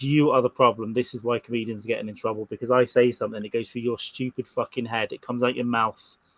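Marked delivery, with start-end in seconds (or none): none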